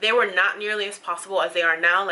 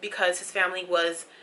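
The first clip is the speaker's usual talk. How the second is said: usual speaking voice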